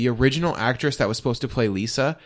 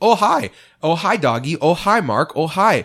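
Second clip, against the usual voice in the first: odd, very slow, drawn-out hellos with raised pitch; 6 semitones higher, 4 dB louder than usual. Quoting how Tommy starts every conversation: Tommy Wiseau impression. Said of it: "Tommy starts every conversation with".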